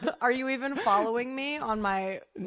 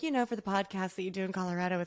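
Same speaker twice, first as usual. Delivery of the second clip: put-on woman muttering under her breath; 2 semitones lower than usual. Retelling a gift from a mother-in-law: imitating muttering under her breath. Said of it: "under her breath".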